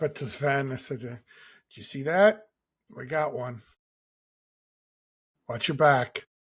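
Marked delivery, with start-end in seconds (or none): 1.0-6.2 confiding, sidelong aside. Retelling a quiet aside to Sven after a disapproving woman walks away: retelling a mutter under breath. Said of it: "Kind of under my breath".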